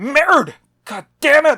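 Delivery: very loud, very high, shrill, swooping unhinged meltdown yell. Imagining an actor as a French character losing his mind: Adam Driver losing his mind. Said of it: "I just wanted to have an excuse to do that impression".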